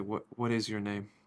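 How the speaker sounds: whispered character voice. Answering a whispering girl in character: whispering in character. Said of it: "I'm gonna whisper back".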